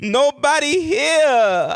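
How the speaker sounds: over-the-top, exaggerated, very high woman's voice. Retelling what a woman said, with extra sauce on the voice: exaggerated imitation of her. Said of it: "that's how she sounded".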